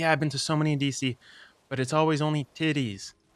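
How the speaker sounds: put-on thick, laid-on Boston accent. Quoting a friend on strip clubs: imitating a thick Boston accent. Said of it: "she had a thick Boston accent".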